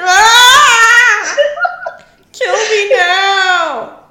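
very loud, very high wail of agony. Retelling how a woman reacted when her hair caught in his crown: mock yelling in agony. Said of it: "she yells out like she's in agony".

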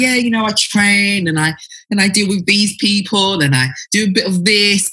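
flat matter-of-fact delivery. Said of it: "you're saying it so, so matter of factly".

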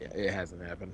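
low, quiet, sheepish.

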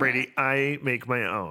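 unhurried, deliberate, slow and drawn out. Showing how the other speaker really said it: imitating her reply. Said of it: "you said it like this".

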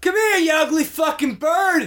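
shrill, very high, jeering, taunting yell. Trying to draw the distant birds closer, yelling at the birds. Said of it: "Throw our yelling".

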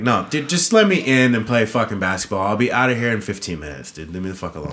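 ordinary delivery

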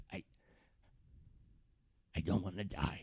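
hushed, quiet whisper. Voicing a terrified NPC speaking privately to one character: speaking so others can't hear. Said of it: "tries to say this in a way that everyone else can't hear".

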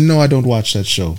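put-on smiling voice. Retelling how a woman answered while she smiled, mimicking a smiling denial. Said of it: "she smiled when she said".

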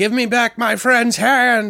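put-on very high, loud, crazed drunken shout. Speaker imagines a drunk bum from a painting story, acting drunk and crazy. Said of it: "He's all drunk and like crazy".

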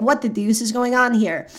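normal talking voice

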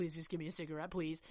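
mock, nervous pleading voice. Acting out a nervous character begging for a cigarette: imitating a nervous pleading plea. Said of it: "She's, like, freaking out".

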